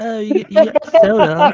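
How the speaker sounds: put-on British accent. Retelling what the lady on the plane said: imitating a british accent. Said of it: "I heard a British accent".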